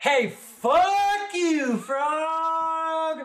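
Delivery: very high, very loud, shrill yell. A character shouts at a frog from wherever he is in the room, yelling. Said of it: "just yells in the room".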